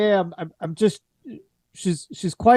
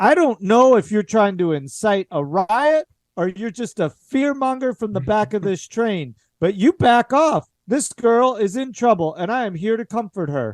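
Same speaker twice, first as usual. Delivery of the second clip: ferocious, fierce, fired straight back, no hesitation; 2 semitones higher than usual. Voicing a woman who fires back at someone who asked her name, fierce retort. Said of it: "she very fiercely fires right back".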